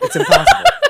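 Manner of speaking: very high, loud, squeaky voice. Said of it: "I'm a natural tenor".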